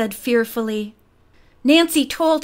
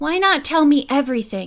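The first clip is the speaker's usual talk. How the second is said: plain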